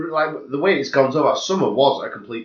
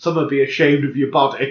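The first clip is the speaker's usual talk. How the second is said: plain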